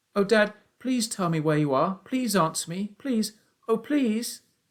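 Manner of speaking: trembling voice. Reading a story aloud, the boy begging his lost father to answer: trembling voice. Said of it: "my voice began to go all trembly".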